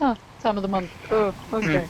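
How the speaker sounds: acted easygoing, unbothered voice. Imitating another player's character reacting to a remark: imitating someone unbothered. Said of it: "he's not even bothered".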